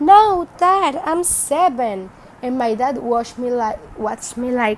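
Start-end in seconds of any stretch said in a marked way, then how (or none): 0.0-2.1 play-acted, very slow, stretched-out, high childish scream. As a child, correcting a father's claim about age, retelling a childhood scream. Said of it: "I screamed like".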